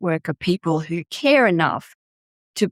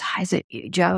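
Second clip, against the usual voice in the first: mimicked whisper, quieter; 4 dB quieter than usual. Retelling a phone call, imitating how the caller whispered to the speaker. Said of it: "she said in a really whispered voice".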